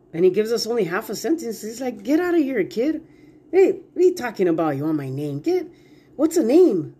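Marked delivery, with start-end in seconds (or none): 2.1-6.9 playful, joking, swooping sing-song. Acting out God brushing off a question about his name: playful God voice. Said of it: "God is kind of being playful there too".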